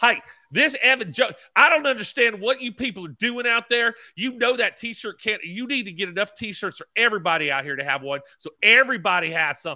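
put-on, very high-pitched, angry scolding tirade. Acting out how mom would get up and rant at the racing officials: imitating mom ranting angrily. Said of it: "and drag everyone through the dirt".

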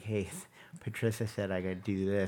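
put-on little boy character voice. Retelling a scene from the movie Split: Hedwig voice. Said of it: "the voice that he does where he talks like that".

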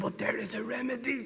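soft, put-on German-accented English. Quoting a man's repeated line in his German accent. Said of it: "but in his German accent".

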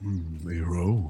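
hushed, soft half-whisper, musing under the breath. Voicing a character approaching while others sleep: half-whispering in character. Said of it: "Kind of, like, whispering 'cause people are sleeping".

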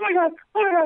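frantic, freaked-out voice. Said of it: "helicopter moms".

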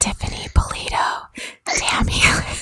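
soft asmr-style whisper.

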